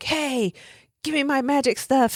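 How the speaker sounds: put-on very high, nasty, mean shouted yell. Describing a movie scene, acting out Bedloe's mean yelling. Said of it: "he's like all like mean and yelling at him".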